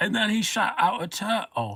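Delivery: very high-pitched, very slow line reading. While talking about impressions, the speaker tries a Christopher Walken impression. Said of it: "I love a good Christopher Walken impression".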